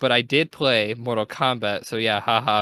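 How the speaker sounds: ordinary talk, nothing marked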